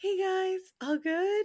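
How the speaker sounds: awkward, uncomfortable, very high pitch, very slow, drawn-out. Describing a TikTok sound of someone walking in, imitating an awkward greeting. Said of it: "when they're like really awkward".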